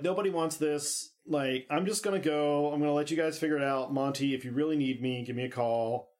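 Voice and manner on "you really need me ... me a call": ordinary talk, nothing marked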